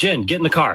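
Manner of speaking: urgent, high-pitched, hurried voice. Acting out a danger scene for the other speaker: urgent emergency command. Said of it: "let me act this out for you".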